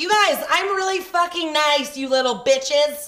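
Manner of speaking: firm, stern, loud tone. Retelling scolding the kids on the last day: imitating a stern tone of voice. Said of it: "I had to have a stern tone of voice with them".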